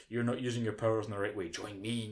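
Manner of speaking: ordinary talk, nothing marked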